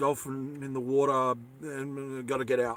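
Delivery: soft, muttered mumble under the breath. Retelling how a scared friend on a boat mumbled to himself: mumbling like Toby. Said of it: "he just mumbled to himself".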